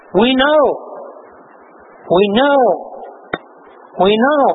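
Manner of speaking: plain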